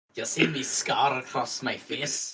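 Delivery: put-on Scottish accent. Speaker continues a joke about drop bears with the others, put-on Scottish accent. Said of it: "does a Scottish accent".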